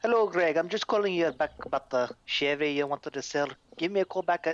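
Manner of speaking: put-on speaking with a Scottish accent. Retelling a voicemail a scottish guy left by mistake, scottish accent impression. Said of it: "He was like".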